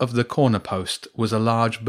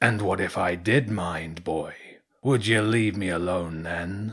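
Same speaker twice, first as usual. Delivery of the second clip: put-on old cormorant character voice, aged bird sound; 3 semitones lower, 4 dB quieter than usual. Reading a bedtime story, an old cormorant questions a boy: old cormorant character voice. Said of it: "On top of the corner post was a large bird, a cormorant twice the size as the one he'd spoken to on the beach. / The old bird paused and slowly turned its beak downward to point at James. / Bedtime St".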